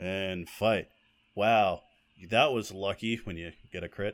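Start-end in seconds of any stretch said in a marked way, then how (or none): 0.0-0.9 mock bored, flat narrator voice. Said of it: "He sounds so bored".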